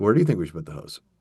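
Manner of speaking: a little sarcastic. Showing how one might answer a dumb question, a little sarcastic. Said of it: "but it is a little sarcastic".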